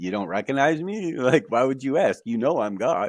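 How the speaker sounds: sarcastic, matter-of-fact, isn't-it-obvious tone. Retelling what god said to the speaker: imitating a sarcastic reply. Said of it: "kinda looking at me sarcastically".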